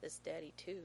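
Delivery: plain reading voice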